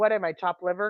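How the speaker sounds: plain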